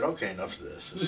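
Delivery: ordinary talk, nothing marked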